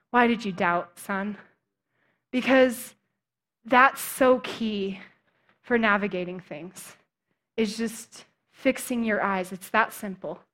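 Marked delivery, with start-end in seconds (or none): 0.2-1.4 very fatherly tone. Picturing Jesus talking to Peter after he sinks: very fatherly way. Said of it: "in, like, a very fatherly way".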